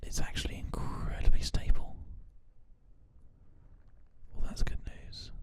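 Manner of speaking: ASMR-style whispering.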